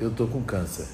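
quiet and hushed. Recounting what a spiritist center's president told him privately, quoting him speaking quietly. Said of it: "E falou baixinho assim".

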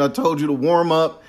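play-acted coach voice, high and screaming. Retelling a movie scene where the assistant coach screams at a player: imitating a coach screaming.

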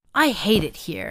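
plain reading voice

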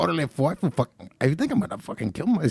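attempted East LA accent. Speaker tries the accent again, attempting an East LA accent. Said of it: "That's not even like the East Los".

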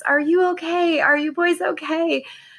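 acted frantic scream, very high and panicked. Retelling screaming at the boys asleep in their beds: retelling a scream. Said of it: "I screamed in front of them".

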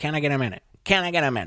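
sing-song, lilting politician-style phrasing. Showing the catchphrase of a Ross Perot impression: Ross Perot impression. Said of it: "the impression isn't about, like, the impression".

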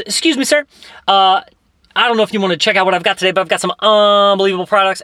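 salesman's sales patter voice. Retelling how a salesman approached people: imitating a salesman's pitch. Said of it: "he stops a homeless man".

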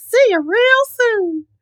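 squeaky voice, high-pitched and slow. Trying to recall Mickey's actual line for a co-speaker and listeners, do a Mickey Mouse impression. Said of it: "your Mickey Mouse impressions".

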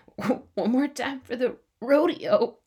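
mock tearful voice, fighting back tears. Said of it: "says this while holding back tears".

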